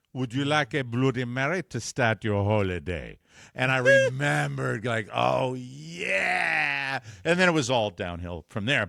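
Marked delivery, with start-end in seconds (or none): 0.1-3.1 put-on heavy, very thick Caribbean accent laid on thick. Retelling what a flight attendant said to him, in a thick caribbean accent. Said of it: "with a very thick Caribbean accent".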